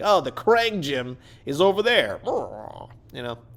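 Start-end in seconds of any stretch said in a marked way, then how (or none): 0.0-2.2 bad, put-on action-figure toy voice. Reviewing an action figure who looks like he's been working out: terrible action-figure impression. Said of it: "that's a terrible impression".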